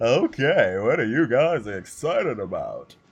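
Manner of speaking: loud announcer voice with wide pitch range.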